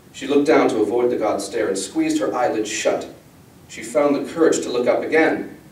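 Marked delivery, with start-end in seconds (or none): none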